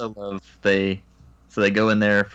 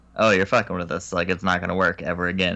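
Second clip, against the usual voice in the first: normal talking voice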